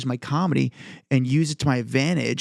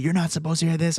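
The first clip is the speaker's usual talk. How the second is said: put-on screaming in a scolding outburst; 3 semitones higher than usual. Retelling how an old man grabbed him: imitating someone screaming. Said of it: "starts screaming at me".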